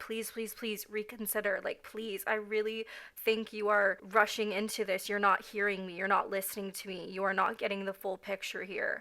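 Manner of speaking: acted upset crying, tearful voice. Retelling own past words to someone who refused: retelling a tearful plea. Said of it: "I was extremely upset and I did cry".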